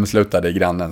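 ordinary talk

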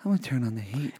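low, quiet mutter under the breath. Retelling how the other speaker admitted turning on the heat: imitating someone saying it low. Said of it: "he said it kinda low under his voice".

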